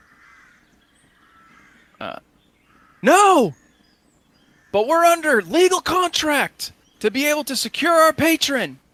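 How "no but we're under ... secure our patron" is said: loud, high-pitched shouting. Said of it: "One of the men shouts, uh, shouts back at him".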